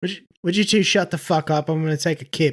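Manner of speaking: put-on British accent with a rude, demanding tone. Answering a request to speak to another speaker: British accent. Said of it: "would it be any better if I did it in a British accent".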